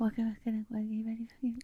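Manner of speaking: put-on soft-spoken voice. Imitating a waiter who had a really quiet voice: imitating a very quiet waiter.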